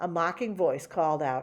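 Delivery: plain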